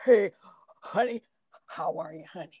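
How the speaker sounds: bad put-on tipsy slur, loud and slurred. Retelling Harold, just up from a nap, greeting the speaker; imitating Harold's drunk-sounding speech. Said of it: "that's a bad impression".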